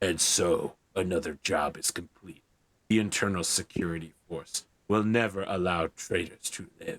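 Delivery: deep, low, digitized masked villain voice, audible breathing. Narrating a scene, voicing a helmeted character: digitized breathing Darth Vader-style voice. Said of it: "very digitized, breathing, Darth Vader style version of Poe's voice".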